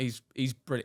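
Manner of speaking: ordinary talk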